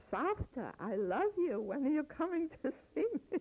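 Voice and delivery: mock very high, gushing, excited sing-song. Imitating how she talks to the speaker, imitating a very excited voice. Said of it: "She speaks in a very excited voice".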